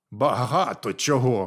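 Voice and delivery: grumbled, grumbling. Reading a tale, the dwarf answers the frog while making a noose: grumbled. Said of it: "пробурчав карлик".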